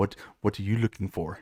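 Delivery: put-on gruff, low, husky, thick Russian accent. Imagined person greeting someone who opens a building's door: husky Russian accent. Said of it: "somebody with a like a, a husky Russian ass accent comes up".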